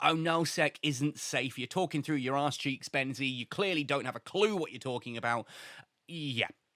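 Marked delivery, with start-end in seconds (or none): none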